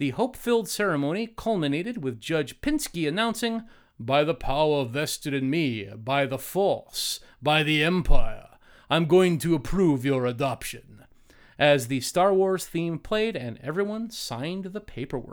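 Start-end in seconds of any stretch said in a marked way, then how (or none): 4.0-11.0 put-on vampire voice, lower. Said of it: "did he sound like, uh, Dracula like that".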